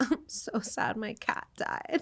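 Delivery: fake sob, whispered, breathy and very slow. Retelling a prank where someone pretended to cry: imitating fake crying. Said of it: "Nicole pretended she was crying".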